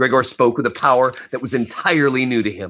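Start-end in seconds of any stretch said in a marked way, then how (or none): none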